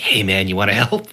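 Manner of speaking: tiny whisper like a fly. Speaker imagines tiny voices heard by giants, a fly whispering in an ear. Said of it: "like if a fly whispered in your ear".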